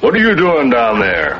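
fast, big bear voice. A father tells his son a fox-and-bear story, talking like a bear. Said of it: "He talks just like a bear and a fox".

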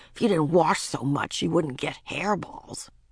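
ordinary delivery, nothing marked

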